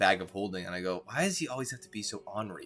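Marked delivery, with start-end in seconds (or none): 1.0-2.7 quiet muttered whisper. Speaking in character, really to a bag of holding: whispering to oneself. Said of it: "I whisper to myself".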